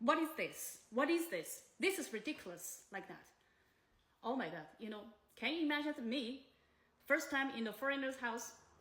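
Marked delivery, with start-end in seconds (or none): none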